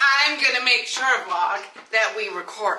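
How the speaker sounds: put-on American accent. Telling the others she'll make sure they record, in an American accent. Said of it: "Why do I have an American accent?".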